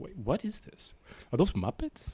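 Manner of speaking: mock very quiet, slowly dawning puzzled murmur. Acting out a bar patron slowly noticing the TV: imitating a slowly puzzled bar patron. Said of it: "You're just slowly like".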